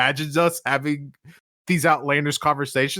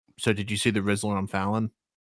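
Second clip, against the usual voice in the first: put-on grave, low, dead-serious delivery; 6 semitones lower, 5 dB quieter than usual. Retelling what a fellow player said after long silence, mock deadly serious tone. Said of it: "he goes in the most deadly serious tone".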